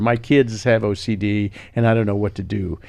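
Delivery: ordinary talk, nothing marked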